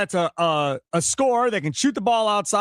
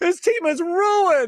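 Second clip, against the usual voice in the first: mock crying despair, high and slow. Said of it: "gonna cry and go".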